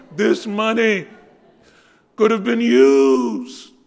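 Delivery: mock overdone, very loud, high piteous wail. Acting out a man who stands up and speaks, mock-piteous wailing. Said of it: "with piteous intonations, this money, sort of a Brando, Stella".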